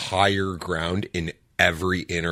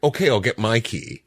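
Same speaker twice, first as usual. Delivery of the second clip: sarcastic, joking, tongue-in-cheek jabbing remark; 4 semitones higher, 3 dB louder than usual. Retelling to the other speaker an own past remark: retelling own sarcastic remark. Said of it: "just a sarcastic comment".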